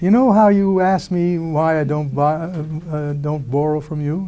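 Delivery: sweetest honeyed, sugar-coated tone. Retelling a phone call asking a finance president for a favor: imitating his own sweetest voice. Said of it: "in my sweetest voice".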